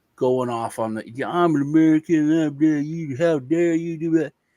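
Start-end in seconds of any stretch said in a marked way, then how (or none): 1.1-4.3 heated, outraged, angry, indignant yelling. Retelling how a friend's father yelled at police officers: imitating someone yelling angrily. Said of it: "he just starts yelling at the cops".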